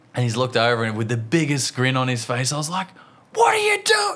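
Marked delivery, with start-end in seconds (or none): 3.3-4.1 mock, full, very high-pitched angry dad yelling. Retelling calling out to a boy who ran off grinning, retelling an angry-dad yell. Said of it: "I've gone full angry dad mode".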